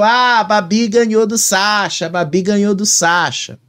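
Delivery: play-acted light, held-back, mild half-shouted call. Retelling what someone on a reality show shouted: imitating someone shouting. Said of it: "a Vanessa ficou gritando ali dentro".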